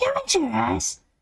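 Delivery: put-on pinched voice. Showing how Bea's voice sounds as if squeezed, speak in Bea's pinched voice. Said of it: "yung boses ni ... Bea na para bang inipit".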